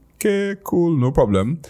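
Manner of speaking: high, breezy, casual, easygoing voice.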